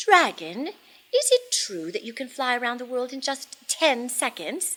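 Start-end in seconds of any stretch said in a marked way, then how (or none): none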